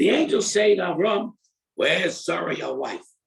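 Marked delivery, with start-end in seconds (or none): 1.8-3.0 put-on improper, rude tone. Reading the verse where the angels ask about Sarah, imitating an improper tone. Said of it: "I say it in that tone because it really is not a proper thing to say".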